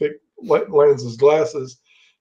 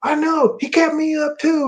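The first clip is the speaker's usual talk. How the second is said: pitched-up yelling, hollered; 12 semitones higher than usual. Telling a story, acting out one man's reply; imitating someone yelling. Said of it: "yelling like that".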